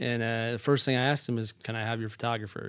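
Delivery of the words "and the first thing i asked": usual speaking voice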